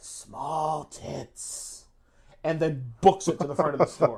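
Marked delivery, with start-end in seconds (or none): 0.0-1.8 hushed, creepy, raspy, rasping whisper. Retelling how someone crept up and whispered in a woman's ear, raspy Crypt Keeper-like whisper. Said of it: "whispers in her ear in this raspy, crypt keeper-like voice".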